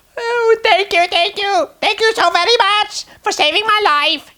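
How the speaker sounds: tiny, very high, squeaky mouse voice. Narrator reads the field mouse's line to the Tin Man, squeaky mouse voice. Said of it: "said the field mouse in a squeaky voice".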